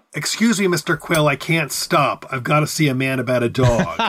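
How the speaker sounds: ordinary delivery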